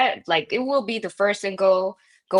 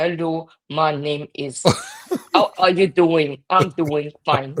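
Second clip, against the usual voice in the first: thick, bad, fake German accent speaking English; 3 semitones lower, 3 dB louder than usual. Imitating how German speakers sound in English: bad German-English accent. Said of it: "The German English accent is really bad".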